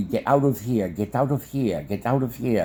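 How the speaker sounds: ordinary talk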